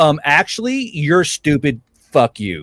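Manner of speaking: ordinary talk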